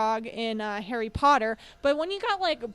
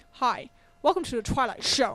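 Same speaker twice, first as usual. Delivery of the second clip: mocking voice, as if mouth full of spit. Making fun of an old TV intro host: Rod Serling voice, mouthful of spit. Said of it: "I used to make fun of him 'cause he's like".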